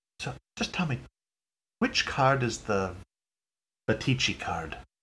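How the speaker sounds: quiet, hushed, close half-whisper. Voicing a character who leans over to ask a card dealer: half-whispering in character. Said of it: "whisper a little bit and say".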